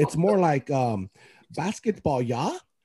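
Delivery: attempted Finnish accent. After apologizing to finnish listeners, the speaker tries the accent again, put-on finnish accent. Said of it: "Was that better?".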